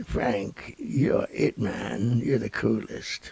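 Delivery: bad put-on voice, slow and rough-edged. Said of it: "That's the worst [name] impression I ever heard".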